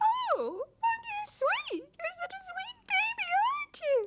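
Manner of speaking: put-on very high, weird, swooping, squeaky baby talk. Demonstrating on the radio how everyone talks to babies, in a high squeaky baby-talk voice. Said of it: "this weird, high, squeaky voice".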